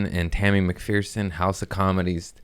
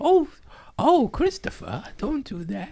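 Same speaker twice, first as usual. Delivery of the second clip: very high, sing-song, swooping put-on storybook voice. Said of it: "I was trying to do that voice".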